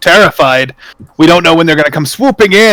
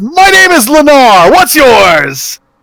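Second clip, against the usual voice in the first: full-throated, loud bellowing shout, pitched up; 9 semitones higher than usual. Voicing a loud bearded man in a tavern greeting the party: shouting. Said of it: "he shouts".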